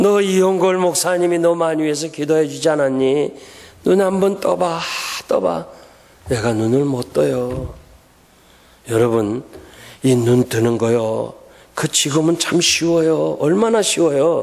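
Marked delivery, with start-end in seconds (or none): 0.0-5.7 put-on weeping, tearful, crying, pleading voice. Retelling a mother pleading with her dying daughter to open her eyes: imitating a crying mother's plea. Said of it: "울면서".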